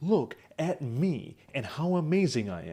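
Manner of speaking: slow, theatrical, over-articulated, overly polished public-speaker delivery. Speaker shows how they used to talk as a public speaker: fake articulate speaking. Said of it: "talk like this".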